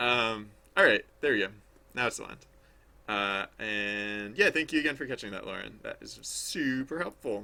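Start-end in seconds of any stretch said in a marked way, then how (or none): 5.8-7.4 slow, sarcastic-sounding delivery. Thanking someone for catching a mistake, sounding sarcastic. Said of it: "I don't know why that sounds sarcastic".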